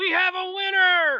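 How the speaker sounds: shrill, very high, loud goblin announcer voice. Game master voicing the goblin as the players open the lock, in a goblin voice. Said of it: "And the goblin goes".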